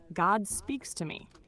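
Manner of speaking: ordinary talk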